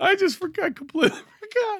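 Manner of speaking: very high-pitched voice, giggling and laughing through words. Apologizing to Pat for laughing at a memory, laughing while talking. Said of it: "I'm sorry, I'm laughing".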